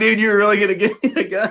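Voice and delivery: very high-pitched, talking through laughter. Retelling a friend who burst out laughing: imitating someone laughing while talking. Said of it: "he starts dying laughing".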